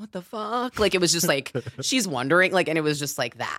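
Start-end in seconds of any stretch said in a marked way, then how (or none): 0.0-0.8 mock frightened, spooked, high-pitched exclamation. Acting out a woman scared someone's in her closet, imitating someone scared. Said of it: "she's scared someone's in her closet".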